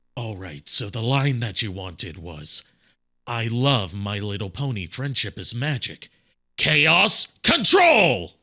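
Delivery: low, raspy voice. Doing a requested line in the Jason Griffith Shadow voice. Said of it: "my Jason Griffith shadow voice".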